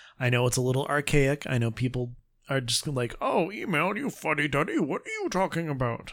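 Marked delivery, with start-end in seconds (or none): 3.2-6.1 put-on sing-song, swooping old man voice. Speaking to listeners, acting out what people say, old man voice. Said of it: "I don't know why I have the old man voice while doing that".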